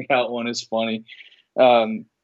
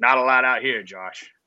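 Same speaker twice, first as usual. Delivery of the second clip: put-on New England accent.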